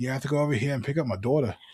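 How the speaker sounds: put-on New York accent. Retelling what Misty said on the phone: imitating Misty's New York accent. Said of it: "she talks like she's, like, a New Yorker".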